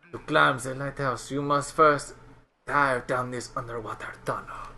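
bad put-on French accent drifting into Mexican accent. A game character addresses the player, terrible french accent. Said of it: "It was a terrible, terrible French voice".

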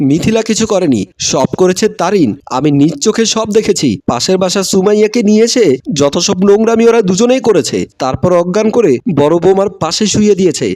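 ordinary delivery

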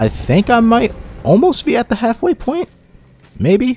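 cracking voice. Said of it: "Why is my voice cracking?".

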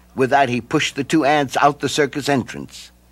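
ordinary delivery

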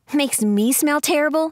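high-pitched, scoffing tone.

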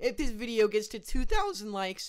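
voice breaking and catching mid-sentence. A sick video maker asking viewers for likes, voice cracking. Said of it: "that voice crack was bad".

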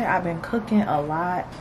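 ordinary talk

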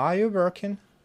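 question-like tune, pitch climbing on working. Showing how english yes/no questions go up: rising pitch on working. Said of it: "Вот такие вопросы, они как бы тянутся вверх интонации".

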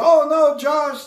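high, loud, pleading German accent.

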